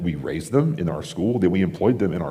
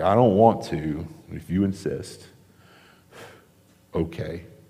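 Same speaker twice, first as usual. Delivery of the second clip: mock unenthusiastic, reluctant, grudging tone. Paraphrasing Peter agreeing to obey Jesus: imitating a reluctant reply. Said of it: "Even reluctant obedience".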